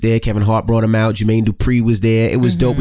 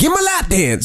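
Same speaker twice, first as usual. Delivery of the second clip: very high, squeaky put-on childish hillbilly voice; 12 semitones higher than usual. Imitating what the other person said: childish hillbilly voice. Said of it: "you have me sounding like a 6-year-old hillbilly".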